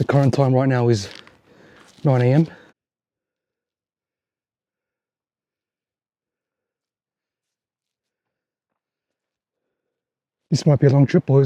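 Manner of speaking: out of breath. Recording the start of a hike, talking to the boys: out of breath. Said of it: "I'm already out of breath".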